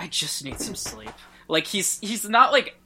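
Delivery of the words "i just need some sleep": put-on worn-out, fed-up, breathy murmur. Retelling a character's line about needing sleep: imitating a fed-up delivery. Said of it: "he's not, like, upset, he's fed up".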